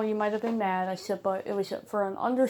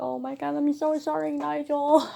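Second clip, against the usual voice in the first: put-on tearful, high, broken-down sobbing; 5 semitones higher than usual. Retelling a past apology to a scared bird, retelling own crying apology. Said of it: "I just broke down crying. I was like".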